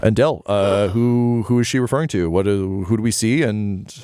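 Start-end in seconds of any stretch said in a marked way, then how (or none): none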